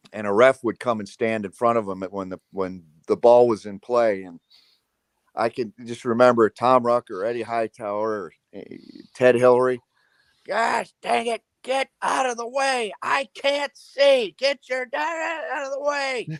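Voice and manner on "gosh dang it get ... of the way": angry yell, higher pitched. Remembering a ref standing in front of Coach Knight: imitating Coach Knight yelling at a ref. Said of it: "or just yell at 'em".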